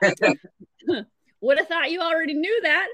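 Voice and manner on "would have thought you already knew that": high, louder, dry and wry dad voice. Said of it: "he was kinda like".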